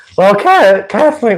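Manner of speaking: cracking voice. Speaker greets someone by name as the voice cracks. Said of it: "what a voice crack".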